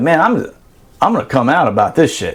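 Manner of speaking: plain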